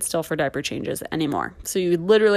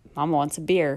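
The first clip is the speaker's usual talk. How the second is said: put-on mutter under the breath, lower pitch; 3 semitones lower, 4 dB quieter than usual. Retelling what a mother said in the car: imitating saying it under her breath. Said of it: "under her breath".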